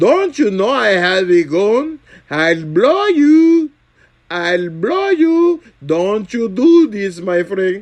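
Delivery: put-on Indian English accent. Impersonating a shopkeeper with a gun, imitated Indian English accent. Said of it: "Do an impression of an Indian shopkeeper with a gun".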